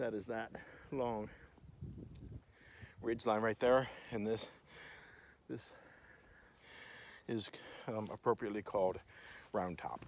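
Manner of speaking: winded, breathless voice. Pointing out the ridges while walking up and down hills, out of breath. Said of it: "being out of breath".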